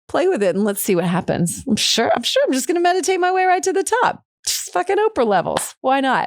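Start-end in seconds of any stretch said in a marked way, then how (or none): 1.6-5.7 put-on very high, scoffing, sarcastic tone. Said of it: "a little bit of sarcasm".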